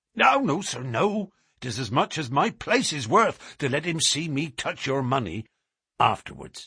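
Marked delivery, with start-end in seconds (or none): none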